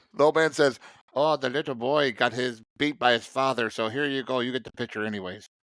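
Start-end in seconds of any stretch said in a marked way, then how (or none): 1.1-5.5 put-on mixed Irish and Mexican accent. Quoting the old man from the movie: Irish Mexican accent. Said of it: "kind of an Irish Mexican, uh, uh, accent".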